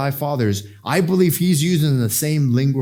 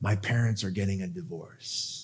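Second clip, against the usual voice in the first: very quiet, low, hushed, trembling, tearful crying voice; 6 semitones lower, 12 dB quieter than usual. Retelling what he said while crying on the speaker's shoulder, imitating someone crying. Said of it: "started crying on my shoulder".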